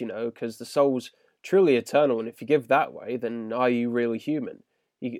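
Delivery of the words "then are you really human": plain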